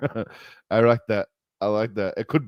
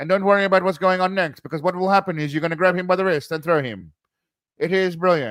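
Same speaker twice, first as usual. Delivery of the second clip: higher, put-on old-timey 1930s-style speaking voice; 8 semitones higher than usual. Imitating how people spoke back then, in the 1930s: 1930s-style speaking voice. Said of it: "I love the voice they have back then where they speak like this".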